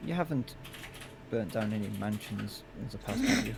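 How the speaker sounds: muttered under breath.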